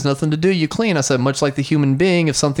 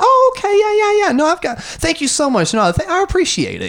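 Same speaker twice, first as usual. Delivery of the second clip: put-on fake-sweet smiling tone, much higher. Retelling answering a condescending person while smiling behind a mask, retelling a fake-sweet smiling tone. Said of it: "smiling with the eyes and the tone of voice".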